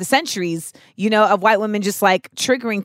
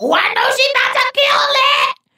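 very high, hyped-up, energetic voice; 4 dB louder than usual.

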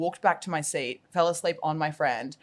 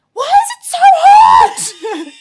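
frantic, hysterical shriek, very high and loud; 17 dB louder than usual. Retelling a hot plane ride, the speaker reenacts a hysterical screech. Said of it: "I literally screeched like".

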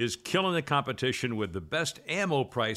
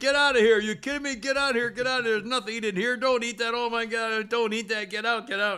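mock yelling, much higher; 10 semitones higher, 4 dB louder than usual. Speaker retells a cop yelling at goats eating his paperwork; imitating a cop yelling. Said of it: "the cop starts yelling".

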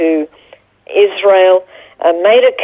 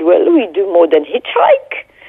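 thick, heavy put-on French accent. Retelling what a nun said back to the speaker: strong french accent. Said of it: "with a very strong French accent".

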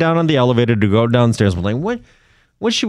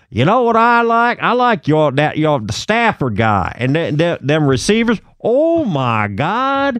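put-on Dallas, Texas accent; 2 semitones higher than usual. Retelling what the driver said after the game: Dallas accent. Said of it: "I'm going to do a Dallas accent".

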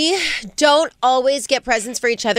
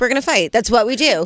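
ordinary talk

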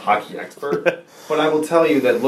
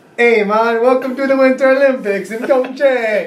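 attempted put-on Jamaican accent; 12 semitones higher, 4 dB louder than usual. Challenged to say the welcome line in your best jamaican accent. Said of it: "say it in your best Jamaican accent".

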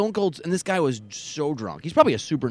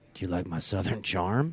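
mock drunk man's speech, lower and quieter; 7 semitones lower, 6 dB quieter than usual. Retelling what a drunk man said when he came up: imitating a drunk man. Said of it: "And he's wasted".

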